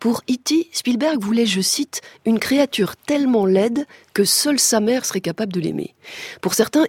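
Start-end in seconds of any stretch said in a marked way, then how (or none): none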